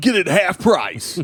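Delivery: high-pitched, salesy strip club radio ad announcer voice. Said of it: "the voices needed to properly promote strip clubs".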